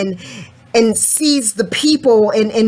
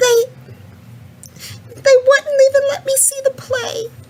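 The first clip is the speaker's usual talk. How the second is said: tearful words, very high, through sobs. Answering a question about why they are crying: crying. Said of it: "why are you crying?".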